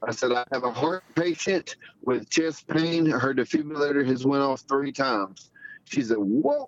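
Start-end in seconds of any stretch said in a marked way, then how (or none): none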